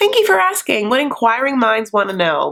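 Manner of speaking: normal talking voice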